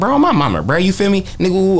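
high, swooping, exaggerated Oakland street character voice. Retelling a joke about how people in Oakland talk, in the Sonny Bo character voice. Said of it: "I was using my character voice".

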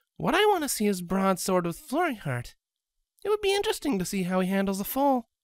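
high-pitched, playfully needling, teasing tone. Scarlet speaks to the others about Broadsword, teasing. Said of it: "she teased".

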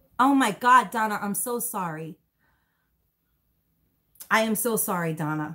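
on the verge of crying. Speaker apologizing to someone over something horrible, close to tears. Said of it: "I will cry".

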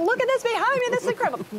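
very high, thrilled, excited shrieking scream. Recalling filming beside a loud well drilling in a village, retelling own screaming. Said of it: "I'm screaming like".

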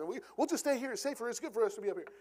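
rapid rush of words. Retelling Peter's words at the Transfiguration, acting out fast talking. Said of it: "you can just almost picture him just talking really fast".

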